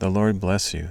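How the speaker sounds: plain reading voice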